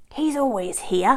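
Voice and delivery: snarling, growling wolf voice. Narrating a story, the wolf spots the shepherd and speaks: growled. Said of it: "growled the wolf".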